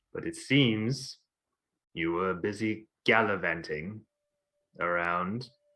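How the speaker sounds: flat, abrupt delivery. A character answers the group's question about the injured: very abrupt, very deadpan. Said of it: "very abrupt, very deadpan".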